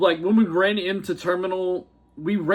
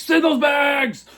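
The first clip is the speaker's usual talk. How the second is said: put-on shouted cheer, higher and louder; 9 semitones higher, 5 dB louder than usual. Retelling how a security officer urged on the bag checkers: imitating a security officer cheering. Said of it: "cheering on the".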